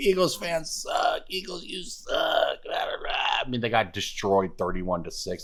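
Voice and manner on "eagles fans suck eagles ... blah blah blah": mock, taunting, high, drawn-out jeering yell. Retelling what Cowboys fans kept yelling after the game: imitating fans screaming. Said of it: "They just kept screaming".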